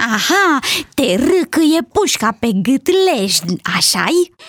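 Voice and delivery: laughing with glee and joy. The doe, who dislikes the crocodile, answers its crying, laughing gleefully. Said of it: "râse bucuroasă".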